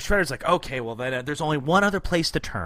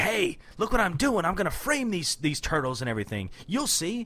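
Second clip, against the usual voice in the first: boastful, scheming, bragging cartoon-villain voice; 3 semitones higher, 3 dB quieter than usual. Retelling the villain's boast about his master plan: imitating Shredder. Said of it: "Shredder's ... He's like".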